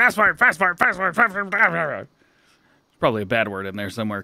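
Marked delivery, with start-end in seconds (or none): 0.0-2.1 rapid-fire repetition, rattled off five times over. Taking up a challenge to repeat a phrase: said five times fast. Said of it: "Say it five times fast".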